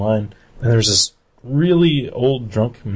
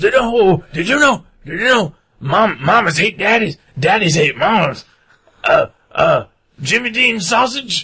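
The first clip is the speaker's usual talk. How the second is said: mock drunken slurred speech, much higher pitch; 10 semitones higher than usual. Retelling what a drunk man said while walking past: imitating drunk slurring. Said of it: "he like was slurring every word".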